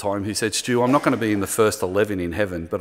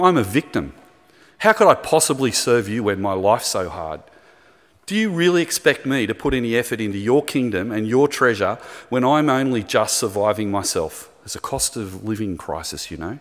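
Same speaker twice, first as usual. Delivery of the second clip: plain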